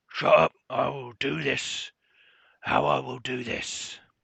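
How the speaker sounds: goblin voice, loud. Narrating a scene where voices are heard ahead, a second one answers in a deeper voice. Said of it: "And a deeper voice".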